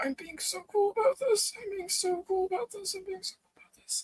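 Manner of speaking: very high, hushed murmur under the breath. After a kiss on a bridge, a character speaks, muttered under breath. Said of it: "like under his breath".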